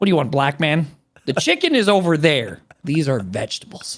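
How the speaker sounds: prim, uptight, buttoned-up man's voice.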